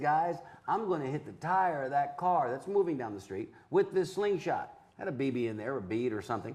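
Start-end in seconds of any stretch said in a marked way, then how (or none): none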